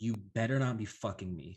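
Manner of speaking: hushed, low whisper. Game narrator voicing a woman who whispers to a player, whispering. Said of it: "she whispers to you and she says".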